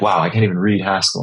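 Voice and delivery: ordinary talk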